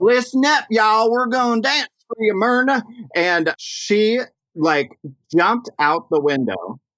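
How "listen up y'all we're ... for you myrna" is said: big southern twang, very pitched up. Acting out a queen emceeing on the mic, in Dina Cass's really southern twang. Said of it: "she has this like really southern twang".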